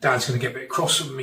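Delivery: ordinary delivery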